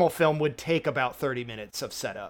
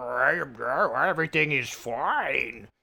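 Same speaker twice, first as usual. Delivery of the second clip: distorted, strange voice, slow. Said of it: "weird distorted voice".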